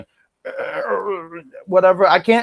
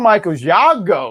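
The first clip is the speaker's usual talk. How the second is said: ordinary talk, nothing marked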